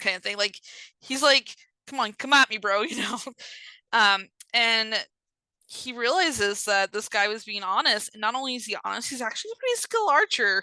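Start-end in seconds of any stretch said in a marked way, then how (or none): 1.9-2.8 put-on defiant, challenging tone. Retelling a story, quoting an archer who admits shooting the horse: imitating a defiant archer. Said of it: "he gets a little defiant".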